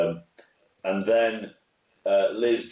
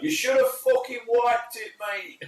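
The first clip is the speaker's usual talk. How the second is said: shrill, high-pitched, yelled shout. Retelling a gig where the closing act bent over: retelling a shout. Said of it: "and I shouted".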